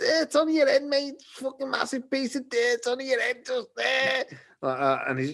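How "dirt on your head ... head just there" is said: put-on high-pitched Liverpool accent. Speaker retells a line said to a man walking past, Liverpool accent. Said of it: "just taking like Liverpool accent".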